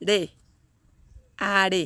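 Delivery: stress placed on RE in haré. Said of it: "The stress goes here on this syllable".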